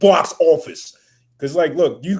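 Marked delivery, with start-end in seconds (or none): 0.0-1.0 loud put-on New York accent. A speaker talking about basketball players, in a put-on new york accent. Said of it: "I'll put on my New York accent".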